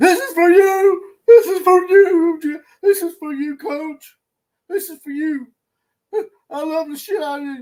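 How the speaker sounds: high, loud, crying, tearful sobbing outpouring. Retelling a tearful speech someone gave: imitating someone crying. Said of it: "he was crying like".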